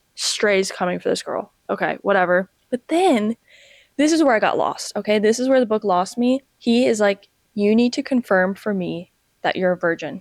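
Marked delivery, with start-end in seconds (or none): 7.6-10.2 acted dead serious voice. Retelling a book scene where a character demands confirmation: imitating someone dead serious. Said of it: "And he's dead serious".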